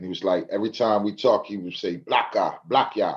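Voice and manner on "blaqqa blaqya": put-on Jamaican accent. Retelling what big bro would say every time they talked, imitating a Jamaican accent. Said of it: "with his little Jamaican accent".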